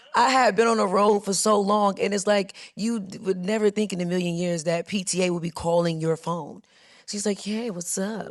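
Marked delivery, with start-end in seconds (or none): 7.4-8.3 silky, smooth, soothing and easy-going voice. Retelling a surprise call from the PTA, imitating the caller's smooth voice. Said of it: "it was very smooth".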